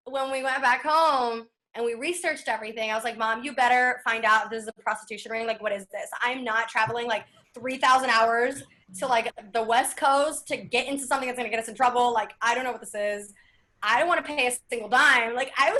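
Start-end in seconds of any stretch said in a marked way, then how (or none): none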